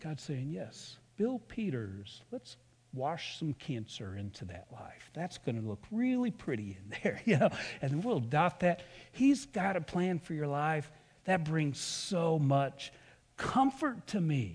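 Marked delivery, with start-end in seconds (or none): 0.5-8.8 very soothing, calming, low hushed tone. Imagining God speaking to Bill Peters, putting on a very soothing voice. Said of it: "A very soothing voice".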